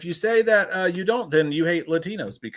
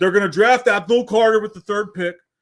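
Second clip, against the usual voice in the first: mock drunk speech, higher and louder; 4 semitones higher, 7 dB louder than usual. Retelling what a drunk fan in a Giants jersey said: imitating a drunk fan. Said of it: "he was drunk as shit".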